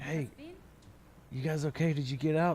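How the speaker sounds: hushed, high-pitched voiceless half-whisper. Retelling hiding under a porch and calling friends, re-enacting own half-whispering. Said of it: "I'm like whispering".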